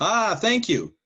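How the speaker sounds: loud, high-pitched hollering.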